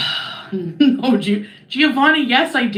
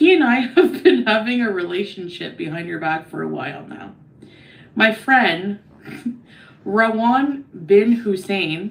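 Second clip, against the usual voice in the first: ordinary talk, nothing marked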